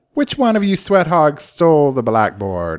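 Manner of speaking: high-pitched woman's voice, full of sass.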